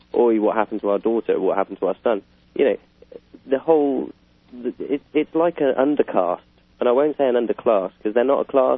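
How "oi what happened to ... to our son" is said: plain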